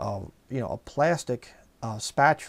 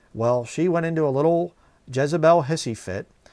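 plain

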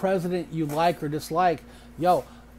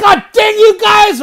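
very loud, very high exclaiming outburst; 17 dB louder than usual. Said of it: "tone of voice is something so important".

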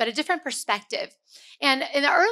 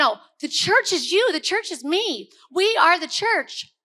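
excited, loud yelling; 5 semitones higher than usual. Addressing listeners about the church, yelling excitedly. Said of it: "I keep yelling".

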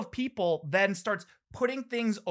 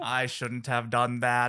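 put-on computer speech voice, lower; 9 semitones lower than usual. Joining the joke about what he would say: Stephen Hawking voice. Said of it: "do Stephen Hawking voice".

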